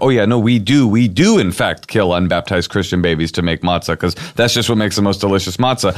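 usual speaking voice

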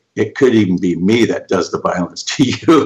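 plain

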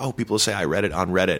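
ordinary delivery

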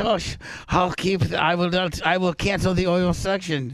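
slowed-down put-on accent.

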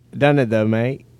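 put-on British accent. Joking about working on a british accent: put-on british accent. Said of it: "working on a British accent".

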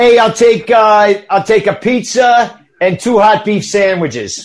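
put-on regional American accent. A speaker tries out the regional accent the group asked for: put-on regional American accent. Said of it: "can someone do that first and I'll replicate it".

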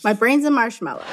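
ordinary talk

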